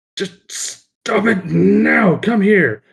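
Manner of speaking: very slow, high, impatient, fed-up shout. Voicing a character calling children over, yelling and losing patience. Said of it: "yells out at them".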